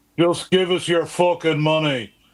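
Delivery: put-on loud high Irish accent. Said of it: "my [name] impression".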